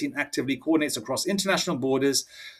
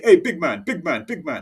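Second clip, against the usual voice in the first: put-on West Indian, Caribbean accent. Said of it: "talking like a West Indian".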